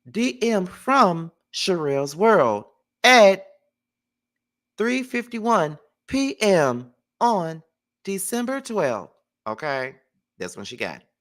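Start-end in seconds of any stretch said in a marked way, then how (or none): 0.1-9.1 high, slow, automated message-machine announcer voice. Announcing when a direct message arrived, in a message machine voice. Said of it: "Let me say it like one of those little, uh, message machines".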